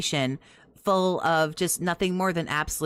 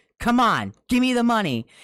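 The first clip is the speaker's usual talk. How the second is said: loud, high-pitched, intimidating street-tough delivery; 6 semitones higher, 5 dB louder than usual. Mocking how someone else asks people for money, imitating a street-corner shakedown. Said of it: "shake somebody down on the street corner".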